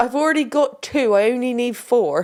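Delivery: put-on rural West Country English accent. Acting out a short scene with another speaker, in a West Country accent. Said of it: "I don't know why the West Country accent".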